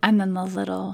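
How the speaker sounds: plain reading voice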